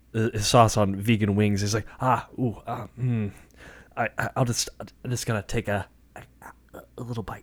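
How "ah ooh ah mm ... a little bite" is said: stumbling and hesitating over each word. Retelling a celebrity eating hot wings: Jeff Goldblum voice. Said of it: "That's a pretty good Jeff Goldblum impersonation".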